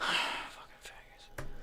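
muttered under breath. Retelling what the group says while mowing, muttered under breath. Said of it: "under our breath".

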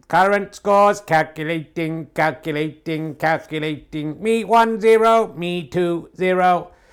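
high, loud computerized robot voice. A presenter announcing the current scores, in a robot voice. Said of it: "We have the robot voice here".

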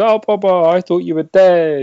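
put-on alien creature voice. Retelling a scene where Bib Fortuna greets Boba: Bib Fortuna impression. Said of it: "That's actually a very good impression".

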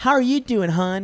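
super bubbly, very high voice. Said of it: "a super bubbly girl".

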